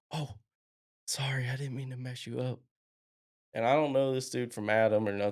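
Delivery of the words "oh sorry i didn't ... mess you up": quiet, hushed, voiced half-whisper, stage whisper. Retelling what a stranger said into the speaker's ear, imitating someone half-whispering. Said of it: "somebody whisper in my ear".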